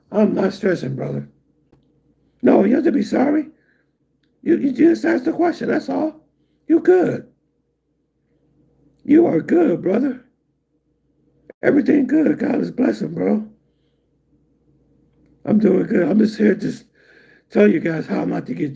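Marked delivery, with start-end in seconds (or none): 6.6-16.0 hoarse, scratchy, rasping voice. Speaker reassures someone who asked about the speaker's voice, hoarse, raspy voice. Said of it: "this hoarseness, this raspiness".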